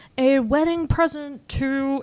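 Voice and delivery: high-pitched villain voice dragged out very slowly. Retelling a movie scene, trying a bad Doctor Evil impression. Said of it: "then you hear Doctor Evil's voice".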